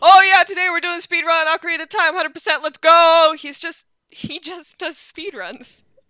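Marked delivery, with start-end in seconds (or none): 0.0-3.3 mock yelling, much louder, higher pitch. Contrasting a calm speedrunner with a loud one, imitating a yell. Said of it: "He's not like yelling like".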